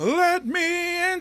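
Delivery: very high-pitched, loud, projecting theatre voice. Showing how stage actors without microphones project: loud projecting stage voice. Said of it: "That's how you gotta talk".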